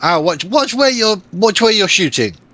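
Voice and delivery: loud, high shout in a character voice. Shouting back at an ally whose arrow just hit: shouting in character. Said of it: "I will shout back at him".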